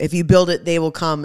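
plain

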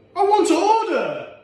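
high-pitched shouting. A customer shouts at the worker, Ismail, demanding to order, shouting. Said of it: "But shout at me one more time".

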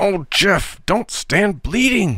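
pleading, imploring, pitched very high. Tom to Jeff, who is bleeding and refuses to speak to him; imploring. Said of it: "implored Tom".

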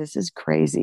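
hushed, whispered aside. Retelling what a health PhD sitting nearby said: imitating someone whispering. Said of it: "he whispers to me".

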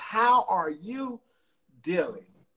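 very slow, deliberate, spelled out word by word. Speaker repeats the question to demonstrate it, said slowly. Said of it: "Let's say that slowly".

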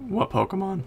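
voice cracking. Player asking a teammate which Pokemon they mean, voice cracking. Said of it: "Oh, my voice cracked".

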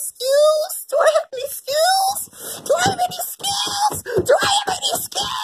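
very high, rapid, frantic panicked babble. Acting a character freaking out over whether it has skills: panicking. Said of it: "chill, chill, chill, chill".

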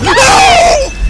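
terrified, very high, loud scream.

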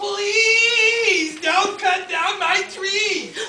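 tiny, high-pitched pleading voice, first word stretched. Narrator voicing an unseen speaker calling to a woodsman: small voice crying out. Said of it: "a small voice cried".

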